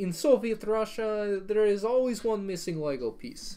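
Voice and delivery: bad, high, put-on fake Russian accent. Joking around after a Kmart ad, the speaker tries a bad Russian accent. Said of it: "did I just try to do a Russian accent?".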